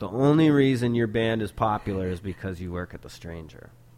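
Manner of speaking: ordinary talk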